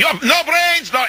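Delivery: high-pitched, furious screaming in Russian.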